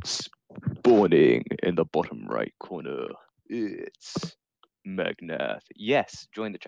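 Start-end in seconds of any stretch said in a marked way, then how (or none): 0.0-5.6 grand arena-style epic announcer voice, deep and slow. Host introduces a player spawning into the match, epic announcer voice. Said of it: "putting on an epic voice".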